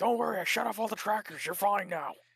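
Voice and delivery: high-pitched shouting, pitched way up. Imagining a phone shouting in Alex Jones's voice: shouting Alex Jones voice. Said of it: "my phone started shouting at me and Alex Jones's voice".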